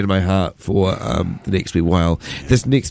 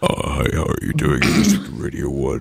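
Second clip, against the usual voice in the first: put-on sick voice, deep and much lower; 7 semitones lower than usual. Radio presenter tells Will about being sick yesterday, imitating his sick voice. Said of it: "my voice was like".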